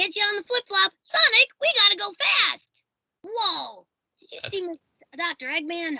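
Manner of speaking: very high-pitched cartoon sidekick character voice. Performing a requested character line for an interviewer: Tails voice. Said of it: "can you do, like, some Tails".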